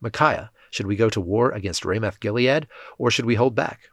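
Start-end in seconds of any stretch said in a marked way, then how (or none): none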